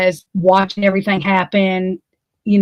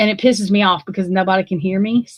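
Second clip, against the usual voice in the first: plain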